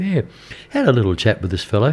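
normal talking voice

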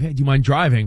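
ordinary talk

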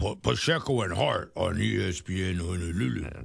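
big put-on radio station-ID announcer voice. Explaining what imaging means, doing a station id in a big radio imaging voice. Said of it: "when you have the big voice that says".

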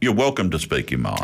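ordinary talk, nothing marked

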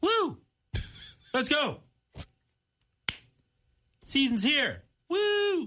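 exaggerated, fake hyped-up delivery.

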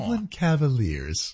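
soft, tiptoeing voice. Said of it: "like, tiptoed when you said".

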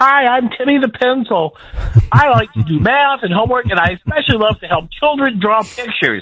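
very high, little googly-eyed talking-pencil voice. Retelling a professor's classroom demonstration, voicing the pencil: Timmy the Pencil voice. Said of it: "he starts doing a voice for the pencil".

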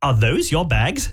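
put-on British woman's accent, held steady. Retelling what a woman said to them, the speaker imitates her accent. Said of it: "I'll see if I can maintain that accent".

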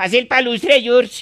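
put-on Russian accent. A seller showing off a Russian-style wool hat, fake Russian accent. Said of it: "queda hablando como un ruso".

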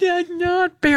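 high, upset, tearful voice, sobbing and crying. A dad retells how Noah reacted to losing a game, imitating Noah crying. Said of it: "Noah just started crying like".

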